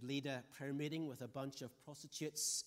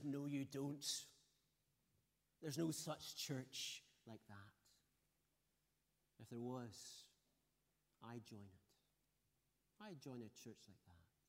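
put-on, very slow, half-sneering delivery; 3 dB quieter than usual. Retelling Harry's answer about a church like that: retelling an almost sneering answer. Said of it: "almost sneered as he answered".

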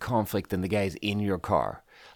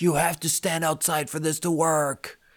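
yelling, pitched up; 6 semitones higher than usual. Retelling what an Uber driver said: imitating someone yelling. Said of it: "yelling at me".

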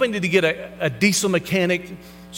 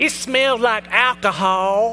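heavy Alabama country twang; 3 semitones higher than usual. Quoting a kid in the back, with a country twang. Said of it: "has this really country twang".

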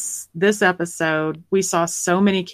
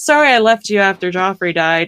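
play-acted, tossed-off, casual, offhand throwaway tone; 4 dB louder than usual. Retelling a character's apology from an episode: imitating an offhand apology. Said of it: "offhand-, handedly says".

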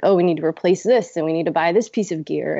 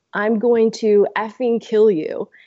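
put-on, lightly done, mild, high, drawn-out unhinged yell; 5 semitones higher than usual. Recounting a stranger in the gym coming at the speaker, retelling his screaming. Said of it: "starts screaming at me".

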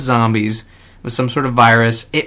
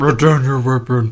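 put-on robot cop voice. Doing a quick impression the others joke about: bad RoboCop impression. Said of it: "That's not RoboCop".

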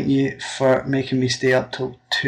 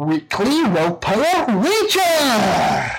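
put-on high, swooping Scottish accent, best attempt; 9 semitones higher than usual. Sending a message to a show's hosts, best-attempt Scottish accent. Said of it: "My best Scottish accent".

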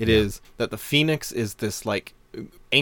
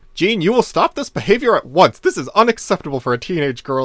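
mock strict, disapproving, loud, pitched-up scolding; 7 semitones higher, 8 dB louder than usual. Retelling a scene where Professor X scolds Jean; Professor X scolding impression. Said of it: "he just starts scolding her".

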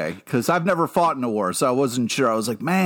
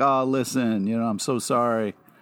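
imitated flirty, suggestive, sympathetic tone. Retelling a condolence call to a widow: retelling flirty-sounding condolence. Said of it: "the tone you just used, Pete, really sounds like you're gonna try to marry my wife".

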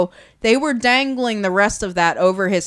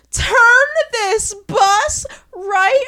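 put-on tearful crying woman voice, higher; 12 semitones higher, 3 dB louder than usual. Retelling a woman's outburst as the bus reaches the campsite: imitating a crying woman. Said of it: "She is crying once they pull up".

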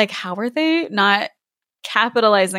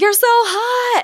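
put-on very high tipsy drunk scream, "hot" drawn out; 13 semitones higher than usual. Speaker recalls screaming at a mermaid in a tank: imitating own drunk screaming. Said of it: "kept screaming".

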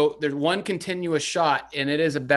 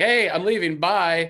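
light, called-out yell; 3 semitones higher than usual. Retelling a movie scene of leaving prison: imitating Bruce Campbell yelling. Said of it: "he yells to somebody that he's like".

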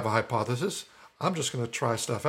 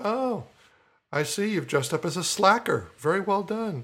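sarcastic jab with higher pitch; 7 semitones higher than usual. Retelling how the wizard teased teens who wore no costume: sarcastic Forgetful Wizard voice. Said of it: "my wizard would give them a hard time".

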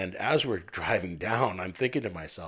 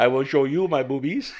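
put-on French-Canadian accent; 6 semitones higher, 7 dB louder than usual. Joking with co-hosts about a stripper name, voicing Crystal Overlord in a Southern Quebec accent. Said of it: "Crystal Overlord is from Southern Quebec. She talk like that".

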